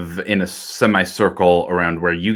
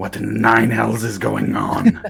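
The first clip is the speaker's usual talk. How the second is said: booming, loud demonic yelling; 3 semitones higher than usual. Voicing a demon heard from the stairs: booming demonic yelling. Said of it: "Abyssal yelling".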